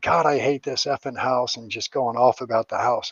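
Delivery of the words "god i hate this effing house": put-on yelling. Telling how a roommate stubbed his toe, retelling his yell. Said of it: "he's yelling".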